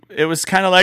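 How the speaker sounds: ordinary delivery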